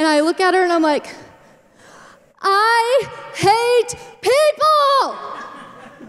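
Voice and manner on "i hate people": mock sobbing, high, tearful, overwrought blurt. Recalling crying in front of a manager at work, reenacting a crying scream. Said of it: "I just screamed it probably a couple of times".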